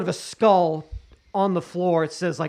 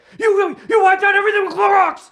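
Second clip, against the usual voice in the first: very loud, very high, shrill drill sergeant yell; 9 dB louder than usual. Describing a drill sergeant yelling at eighteen-year-olds, imitating a yelling drill sergeant. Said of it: "he's yelling at them like".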